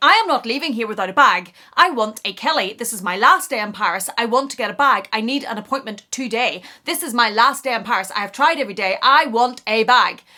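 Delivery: put-on loud, rude, demanding rant. Retelling what customers at the concierge demanded: imitating a rude demanding customer. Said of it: "It was very, very rude".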